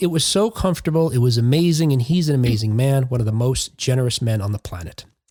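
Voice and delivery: ordinary talk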